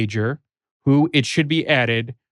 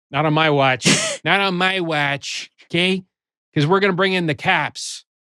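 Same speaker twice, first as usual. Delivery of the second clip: put-on Chicago accent. Playing a character in a back-and-forth bit, speaking in a mock chicago accent. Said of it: "Is that a Chicago accent?".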